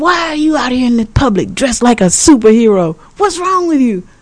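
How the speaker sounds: high-pitched, crazed, shrieking mock scream.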